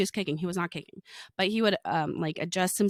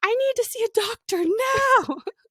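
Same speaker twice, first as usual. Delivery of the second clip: put-on screaming child voice, higher and louder; 5 dB louder than usual. Retelling a child's sudden meltdown on a descending plane: imitating a child screaming. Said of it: "he literally goes".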